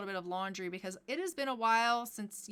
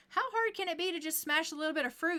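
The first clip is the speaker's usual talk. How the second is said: put-on young daughter character voice, pitched up; 7 semitones higher, 4 dB louder than usual. Voicing the daughter Sim greeting her dad at work: voicing the daughter Sim. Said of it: "And she's like".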